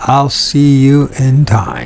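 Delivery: ordinary talk, nothing marked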